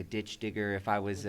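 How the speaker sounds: plain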